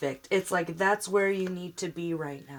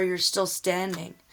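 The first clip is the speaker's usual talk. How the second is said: ordinary delivery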